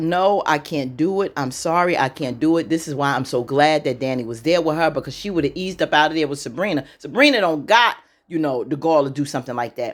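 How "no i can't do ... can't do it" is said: mock earnest, slow, drawn-out pleading voice. Retelling a refusal to do something: imitating someone pleading. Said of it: "Andy's basically pleading".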